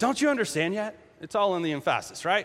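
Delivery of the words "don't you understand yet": acted, mock-angry tone. Speaker demonstrates one way a quoted line can be heard: mock-angry rebuke. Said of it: "sometimes we hear that as kind of angry".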